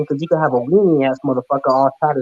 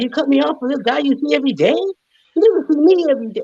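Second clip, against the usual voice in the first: very high, playful, mock-wounded protesting tone; 12 semitones higher than usual. Joking about how he would have reacted if cut off: pretend hurt complaint. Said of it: "I'm just playing".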